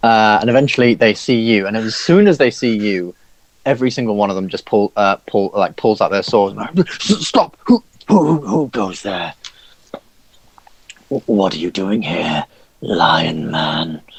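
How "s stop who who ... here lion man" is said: big hobgoblin guard voice. Voicing a large hobgoblin challenging a stranger: large hobgoblin challenging. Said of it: "says the rather large, uh, hobgoblin".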